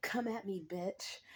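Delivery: prim, fussy, prissy dude voice. Retelling what a harasser said: imitating a prissy dude. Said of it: "prissy dude".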